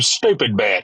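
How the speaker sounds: ordinary talk, nothing marked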